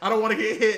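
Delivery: loud, panicked, frightened, terrified scream, acted out. Speaker describing a Pokemon attacking them, acting out a terrified scream. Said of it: "and I'm like screaming, terrified".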